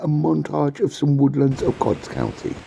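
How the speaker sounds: put-on, announcer-style broadcaster English accent. Introducing a montage of woodlands: BBC accent. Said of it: "In my best B B C accent".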